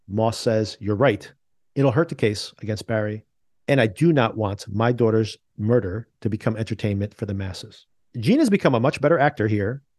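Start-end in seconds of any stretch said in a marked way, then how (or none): none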